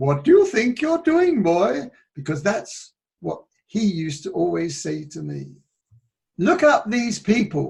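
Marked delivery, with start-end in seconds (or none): 0.0-1.9 put-on Welsh schoolteacher accent, pitched a bit high. Quoting what a teacher always said to him, in a Welsh accent. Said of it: "that's my Welsh accent".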